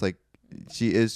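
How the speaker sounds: plain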